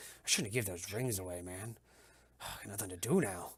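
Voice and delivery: low, soft mumble under the breath. Game narrator voicing a man kicking at the dirt, mumbling to himself. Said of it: "He's kind of mumbling to himself".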